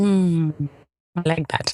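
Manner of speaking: low, flat, let-down disappointed murmur. Reacting to hearing what a name means, sounding disappointed. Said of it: "You sound disappointed in that name".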